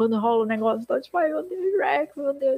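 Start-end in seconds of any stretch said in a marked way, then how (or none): 1.2-2.6 mock crying, delivered much slower. Retelling a scene, imitating a character crying. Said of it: "ele chorando".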